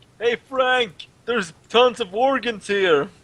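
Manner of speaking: loud, high shout. Recounting the last game, the speaker re-enacts calling out to Frank: retelling a scream. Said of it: "And I screamed to Frank".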